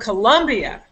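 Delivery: stress on the word Colombia. Explaining which word takes focus in a sentence, stress on Colombia. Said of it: "I can also say it this way".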